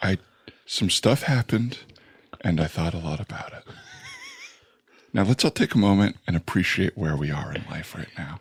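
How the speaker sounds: very soft whisper, acting vulnerable. Speaker demonstrating an apology to Howard, whispering. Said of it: "I'm whispering so you know that this is vulnerable".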